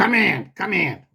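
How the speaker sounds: mobster-type, mafia-style voice. Retelling how the man behind the door called him in, in a mafia voice. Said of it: "he sounded like Mister Terry".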